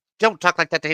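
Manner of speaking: tiny, cute, high little creature voice. Play the tiny gladiator speaking up in a cute, high-pitched little creature voice. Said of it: "a cute little voice going".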